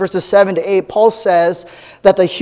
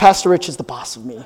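low, grudging, reluctant mumble; 4 semitones lower than usual. Retelling a man made to repeat a sentence, looking down, mumbling. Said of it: "he looks down and he mumbles".

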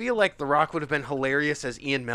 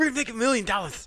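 lisped s sounds with the pitch lifted; 8 semitones higher than usual. Imagining a movie recast, imitating an actor: Sean Astin with a lisp. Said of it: "Sean Astin doing his lisp".

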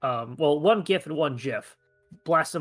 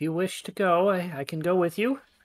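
put-on creepy cheerful woman's voice, higher; 3 semitones higher than usual. Imitating the old wizard lady offering to come along: creepy, happy voice. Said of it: "she sounds like this".

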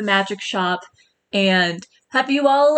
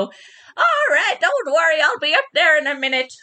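put-on high, elderly gnome woman voice; 6 semitones higher than usual. Describing a magic shop as its unseen keeper calls out: old gnome woman voice. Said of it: "an old gnomish woman".

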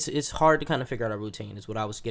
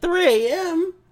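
very high, slow shocked squeal. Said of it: "I said".

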